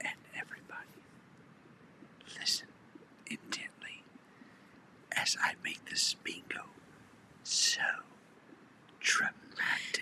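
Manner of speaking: theatrical, dramatic hushed stage whisper. Retelling how she spoke during the game: imitating someone lowering her voice. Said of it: "She lowered her voice".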